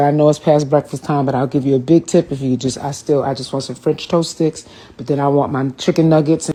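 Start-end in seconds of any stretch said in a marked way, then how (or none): none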